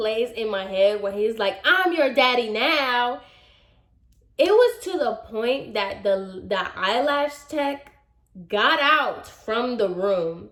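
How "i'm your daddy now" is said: put-on man's yelling tone, softened to a mild yell. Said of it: "he yelled that so loud".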